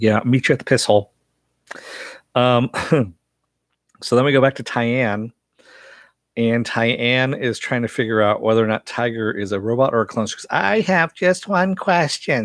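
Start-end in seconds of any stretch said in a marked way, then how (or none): 10.5-12.5 grating, high-pitched, drawn-out annoying woman's voice. Speaker retells what Tyann said, in Tyann's high-pitched annoying voice. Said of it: "She's got the really high-pitched, annoying voice".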